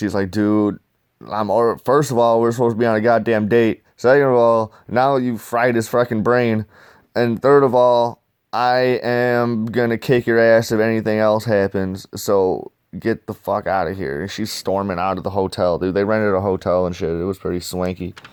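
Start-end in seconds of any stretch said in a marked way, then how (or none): none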